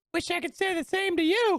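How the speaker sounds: very high-pitched delivery. Retelling what another player said after a game, imitating a very high-pitched voice. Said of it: "he said in a very high pitched voice".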